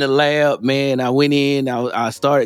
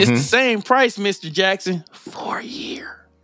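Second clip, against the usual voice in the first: breathy, sinister, whispered evil villain voice; 6 semitones higher than usual. Retelling what the provider said about the plan's price, in an evil voice. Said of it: "You see how I did that?".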